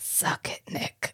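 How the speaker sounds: whispered sotto voce, under the breath. Acting out an imagined parting line, this time delivered: sotto voce. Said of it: "But sotto voce".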